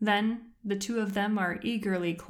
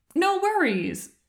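chirpy, very high-pitched and loud; 11 semitones higher, 6 dB louder than usual. A friend apologizes for keeping him waiting, and he answers: chirping. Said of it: "Aang chirps".

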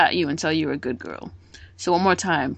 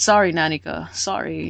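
put-on sad apologetic character voice. Retelling an anime scene, imitating Killua sounding sad. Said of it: "He's all sad".

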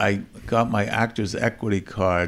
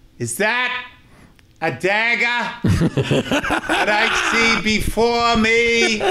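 bad earnest Boston accent, shrill, very high, very slow; 14 semitones higher, 5 dB louder than usual. Recalling acting in Macbeth, quoting his own line from it: horrible Boston accent. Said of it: "I had that horrible Boston accent".

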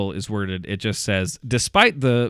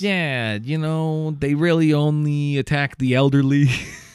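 put-on slipped into a New Jersey accent; 4 semitones higher than usual. Voicing scientists in a joke, new jersey voice. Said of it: "I didn't even mean to do the Jersey voice".

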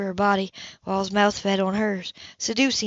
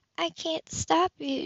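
trembling, high, barely audible half-whisper; 8 semitones higher, 4 dB quieter than usual. A narrator reading a woman's line to the man coming to her, shaky half-whisper. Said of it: "she whispered shakingly".

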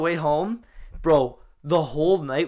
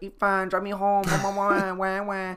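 put-on slow, stretched-out, babyish whiny wail; 4 semitones higher than usual. Retelling teasing a friend in the car: imitating a whiny baby voice. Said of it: "that originated from the mall".

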